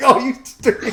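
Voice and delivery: high loud put-on yell. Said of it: "Caleb's yelling at me".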